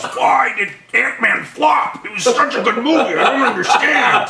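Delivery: very high, slow, drawn-out yelling. Acting out a joke scene of a director in a dungeon: imitating Peyton Reed yelling. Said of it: "And he yells".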